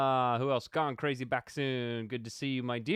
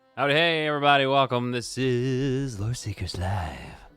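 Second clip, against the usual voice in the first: put-on deep, low, sultry voice; 3 dB louder than usual. Opening Loreseekers Live, the host greets everyone in deep, sultry tones. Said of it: "Those real deep, sultry tones".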